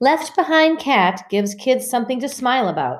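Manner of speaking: loud, clear, high, carrying voice. Ramona speaks in front of her meowing chorus in a loud, clear voice. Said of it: "said Ramona in a loud, clear voice".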